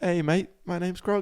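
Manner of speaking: put-on New Zealand accent. Showing the others who the stone dude from Thor is, as Korg with a New Zealand accent. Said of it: "New Zealand, you know uh, Krug from Thor".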